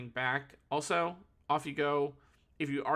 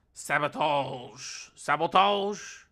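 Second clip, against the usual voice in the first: loud, bad put-on French accent; 6 dB louder than usual. A speaker wonders how a word sounds, trying it in a french accent. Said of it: "how would sabotage be said in a French accent?".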